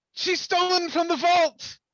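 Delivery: very high, shrill shout. Calling to the guards about a fleeing thief: in-character shout. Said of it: "I'm shouting out".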